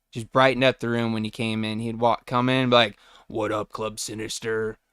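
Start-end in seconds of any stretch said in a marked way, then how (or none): 3.3-4.7 deep, soft, casual voice. Recalling Matt coming into the room with a greeting; imitating Matt's deep voice. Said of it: "That deep ass voice".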